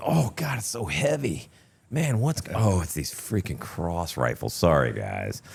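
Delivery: high, swooping, mock complaining tone. Retelling a joke about a heavy uniform top: imitating own mock complaining. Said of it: "I would always pretend".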